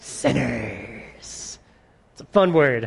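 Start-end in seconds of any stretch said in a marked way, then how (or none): 0.0-1.6 spooky, creepy, breathy whisper. Leading the congregation to say a word together: creepy delivery. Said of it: "just creepily".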